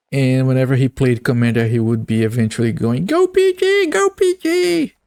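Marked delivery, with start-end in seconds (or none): 3.0-4.8 put-on very high, slow, drawn-out squeaky kid voice. Recalling a kid who played Commander in a game, the speaker does a squeaky little kid voice. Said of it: "this squeaky voiced little kid that would say".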